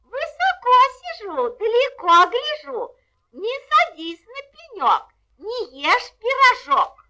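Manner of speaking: put-on very high, thin, tiny little girl voice. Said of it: "тоненьким голоском".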